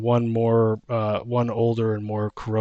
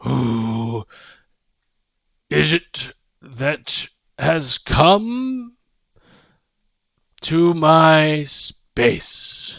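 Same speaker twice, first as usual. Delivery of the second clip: large, pitched-up voice that seems to come from nowhere; 5 semitones higher than usual. Game master voicing an unseen speaker the players hear, large, loud voice. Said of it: "large, loud voice".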